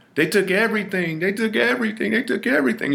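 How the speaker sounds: anguished, repeated, very high wailing scream. Retelling the lady from across the hall bursting in: imitating someone screaming. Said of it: "She's screaming".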